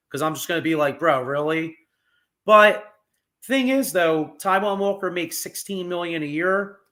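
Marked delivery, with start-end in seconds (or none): none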